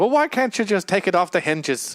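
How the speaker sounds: odd, off-kilter, high-pitched put-on British accent. Retelling a scene, doing the president's line in a weird British accent. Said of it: "president with his weird British accent".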